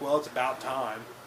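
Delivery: snide, dry, sarcastic tone. Retelling a movie scene, quoting the customer: imitating a sarcastic remark. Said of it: "she says something sarcastic".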